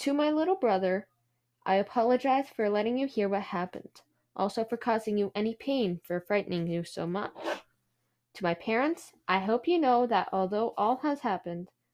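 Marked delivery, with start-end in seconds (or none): none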